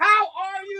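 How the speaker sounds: shrill, high, overloud shouting. A blind speaker retelling how people who see the cane greet them, imitating someone shouting. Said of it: "Why are you screaming in my ear?".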